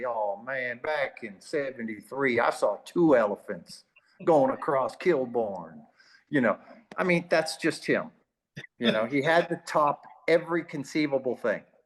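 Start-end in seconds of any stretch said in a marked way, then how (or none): 0.1-5.8 put-on southern drawl, lower. Retelling how a teammate always topped stories: imitating a teammate's southern drawl. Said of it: "in that southern drawl".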